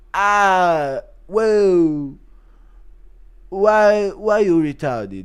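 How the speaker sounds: high, loud, very slow drawl with "ah" dragged out. Reading a chat request, doing Costa reacting to Conor's pic. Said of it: "Impression of Costa, Costa tweeting at Conor".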